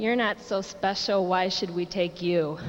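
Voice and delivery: normal talking voice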